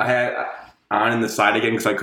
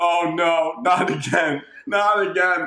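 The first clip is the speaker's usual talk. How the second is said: play-acted very slow, stretched-out, high scream; 7 semitones higher than usual. Retelling how Alex reacted during the game, imitating Alex screaming. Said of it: "Alex is screaming".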